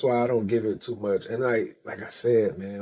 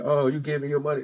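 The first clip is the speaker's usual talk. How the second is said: put-on screaming, faster; 4 semitones higher than usual. Retelling how the mama reacted when he gave his wife money, imitating a screaming mother. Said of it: "the mama was screaming".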